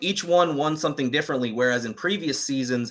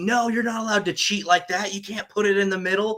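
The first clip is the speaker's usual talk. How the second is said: put-on, frenzied, pitched-up frantic screaming; 7 semitones higher than usual. Speaker recounts watching the show and screaming at the tv: retelling screaming at the tv. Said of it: "I was screaming at the TV".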